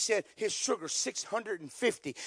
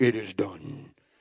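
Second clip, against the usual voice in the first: very deep, booming voice; 14 semitones lower, 6 dB louder than usual. Recalling praying with the guys, voicing the booming voice hoped for: booming voice. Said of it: "I heard the booming voice like".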